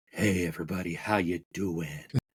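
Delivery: sultry, sexy voice. A co-host greets listeners as the show opens, sultry, sexy voice. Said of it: "that sultry, sexy voice that you hear".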